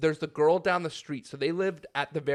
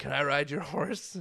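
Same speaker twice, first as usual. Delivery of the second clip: imitated drunken slurring. Retelling what a drunk woman asked a man: imitating drunken slurring. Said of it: "She went over drunkenly slurring".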